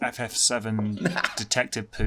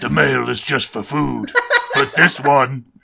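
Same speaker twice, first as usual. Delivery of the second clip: booming, very loud, rough and gruff voice; 4 semitones higher, 11 dB louder than usual. Voicing a female character who spoke to the girl, really gruff voice. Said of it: "I'm going to give her a really gruff voice".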